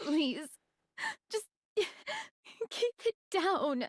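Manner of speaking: crying while talking. Telling the other to be quiet while crying: crying while talking. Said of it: "I told you not to cry".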